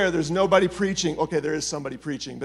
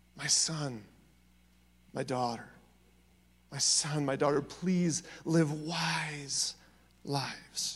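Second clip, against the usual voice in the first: earnest, heartfelt, slow drawn-out pleading; 2 semitones lower, 11 dB quieter than usual. Voicing God the Father in Proverbs: pleading as God the Father. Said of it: "as he's pleading".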